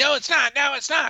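mock angry woman screaming, very high-pitched. Retelling a lady screaming back during a reading: imitating a woman screaming. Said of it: "She starts screaming at me".

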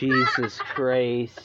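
put-on slow, drawn-out Irish accent.

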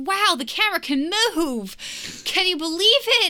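put-on high-pitched, gushing, amazed, childlike wonder.

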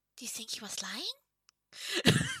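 hushed, secretive, quiet aside whisper. Player character whispering to a companion once someone is out of earshot, whispering. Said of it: "and I whisper to her".

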